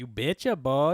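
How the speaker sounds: loud put-on Minnesota accent. Joking about how cold the water was, in a minnesota accent. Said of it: "Almost sound like a Minnesota accent".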